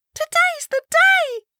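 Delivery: shrill, very high, loud squeal. At breakfast, a girl opening the conversation, squealing. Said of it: "Ellen squealed at breakfast".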